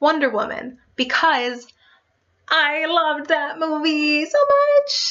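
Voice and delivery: nerdy, high, rising voice, much stretched long. Naming Wonder Woman as a favorite movie, in a really dorky voice. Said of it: "my voice just got really dorky".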